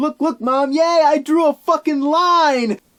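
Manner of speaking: very high, loud fake glee, line stretched out. Voicing the family pictured on the box: mock overjoyed. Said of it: "What could they possibly be so overjoyed about?".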